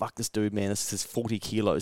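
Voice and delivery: mock angry tone. Retelling own thought while a trainer corrects the lifting: retelling own angry thought. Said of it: "I feel myself getting a bit angry".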